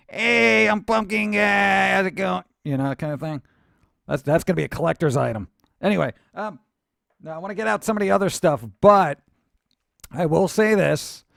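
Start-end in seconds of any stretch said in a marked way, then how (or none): 0.2-2.5 slow, raspy, creaky puppet voice. Voicing a pumpkin-head puppet figure: pumpkin guy puppet voice. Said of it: "if I stuck him to my hand".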